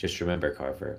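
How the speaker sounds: ordinary delivery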